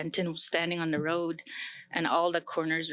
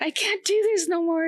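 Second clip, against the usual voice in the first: loud, very high, wailing, sobbing bawl; 13 semitones higher, 7 dB louder than usual. Recalling suddenly breaking down while complaining to someone: retelling own bawling. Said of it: "I started bawling like".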